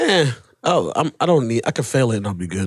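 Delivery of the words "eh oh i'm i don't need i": ordinary delivery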